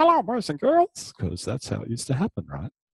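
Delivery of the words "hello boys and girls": funny little squeak, very high-pitched. Recalling the TV as babysitter, the speaker greets like the show: squeaky Mickey Mouse Club voice. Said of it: "that funny little squeaky voice".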